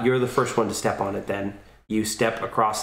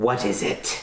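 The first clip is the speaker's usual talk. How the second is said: put-on old hag character voice. A game master narrates the players sneaking across a room, voicing the hag. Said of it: "when you hear the hag go".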